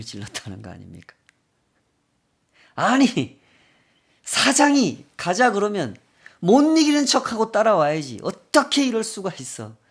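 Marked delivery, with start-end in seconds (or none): 2.8-9.7 furious, high-pitched, loud yelling. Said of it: "노발대발 화를 내면서 소리를 질렀다".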